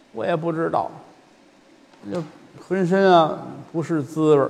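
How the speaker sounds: put-on soft, feeble, listless, strengthless old-man voice. Answering the other performer who asks why he lacks energy, weak, feeble voice. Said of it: "怎么今儿觉得有气无力的呢".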